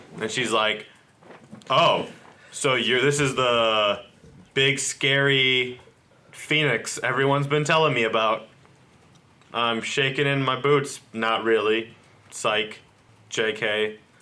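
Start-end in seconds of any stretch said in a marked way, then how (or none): none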